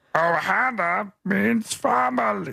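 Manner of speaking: high, rough gurgly voice, Ohana stretched out. Trying the Stitch line again: gurgly Stitch voice. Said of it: "There's a lot of gurgle".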